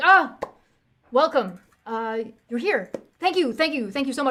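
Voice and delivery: loud, anxious, hand-wringing, nervous king voice. Voicing a pacing, hand-wringing king greeting visitors: nervous hand-wringing king. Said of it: "wringing his hands back and forth".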